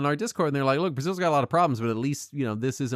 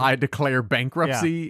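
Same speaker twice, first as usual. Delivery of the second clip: ordinary talk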